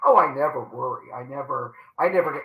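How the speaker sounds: low, pompous voice. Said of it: "so pompously say".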